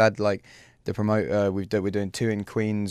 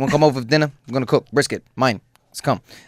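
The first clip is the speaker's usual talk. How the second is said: put-on New York accent, short, snappy, higher, louder; 4 semitones higher, 7 dB louder than usual. Imitating a quick dinner invitation in New York: short, snappy New York accent. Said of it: "it's quite short and snappy".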